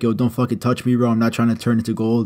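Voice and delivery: ordinary talk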